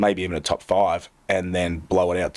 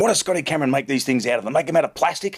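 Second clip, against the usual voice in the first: put-on angry yelling, higher pitch; 7 semitones higher than usual. Retelling how a golf partner reacted to his bent putter: imitating someone yelling. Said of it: "And he starts yelling".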